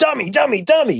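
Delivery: high, mean dad voice, berating.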